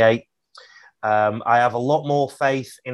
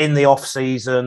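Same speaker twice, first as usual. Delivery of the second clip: plain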